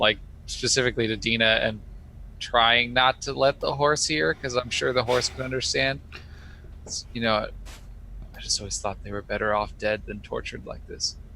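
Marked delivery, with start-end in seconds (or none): 8.4-11.2 real quiet, very quiet, hushed voice. Retelling words said so the horse wouldn't hear, real quiet. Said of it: "say like real quietly".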